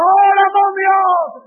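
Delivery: high, shouted, crying out.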